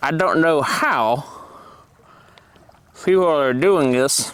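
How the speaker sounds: speaking with full mouth. Explaining how to twist and release it, talking with mouth full. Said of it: "Probably shouldn't talk with my mouth full".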